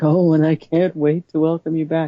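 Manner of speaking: mock unhinged voice. Retelling a scene where the warden welcomes them back: imitating a psychotic warden. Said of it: "she's all, like, psychotic".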